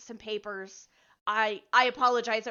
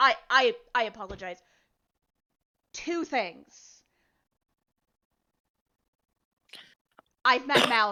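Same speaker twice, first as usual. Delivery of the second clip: jittery, nervous dwarf character voice, louder; 5 dB louder than usual. Voicing a gray-haired dwarf doctor about to piss himself: nervous dwarf voice. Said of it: "like he's about to piss himself, and says".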